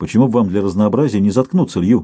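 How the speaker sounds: ordinary delivery, nothing marked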